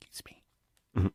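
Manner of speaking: tiny whisper under the breath, barely voiced. Describing a habit when passing strangers, demonstrating a quiet whisper. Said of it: "I'm whispering so quiet".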